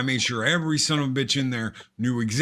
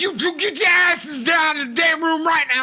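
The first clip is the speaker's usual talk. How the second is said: acted, furious, very high, loud, fast angry yell; 5 dB louder than usual. Recounting opening a door on two people, acting out an angry yell. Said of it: "I'm loud. I am pissed".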